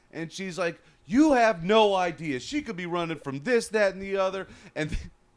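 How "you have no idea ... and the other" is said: mock worked-up woman's voice, high, indignant half-yell. Telling about a bus rider shouting at a transit worker: retelling a woman yelling. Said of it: "she's yelling".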